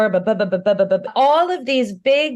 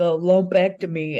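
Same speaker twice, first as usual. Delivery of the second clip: gruff dock worker voice; 3 semitones lower than usual. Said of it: "now that just became a dock worker".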